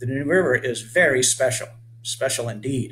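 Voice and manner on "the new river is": plain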